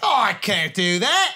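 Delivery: put-on, slow, fumbled attempt at Australian accent. Trying to imitate an actress: attempted Australian accent. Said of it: "I don't know how to do Australian".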